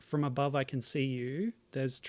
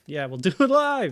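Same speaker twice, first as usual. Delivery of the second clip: booming, loud, drawn-out shout; 4 semitones higher, 12 dB louder than usual. Agreeing to do the run again live, shouting into the microphone. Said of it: "I just shouted into the microphone".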